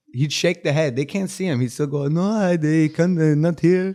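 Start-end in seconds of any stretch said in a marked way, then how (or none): 2.1-4.0 put-on raised, slow, drawn-out Indian accent. Retelling how their dad answered phone calls, indian accent. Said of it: "do an Indian accent".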